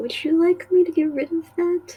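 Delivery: soft whispering. Voicing a temple attendant who offers to clean up blood: quiet whisper. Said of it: "quietly whispers".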